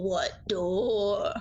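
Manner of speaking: eerie, unsettling put-on voice with "door" drawn out. A tabletop player answering in character, in a really creepy voice. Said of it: "in a really creepy voice I say".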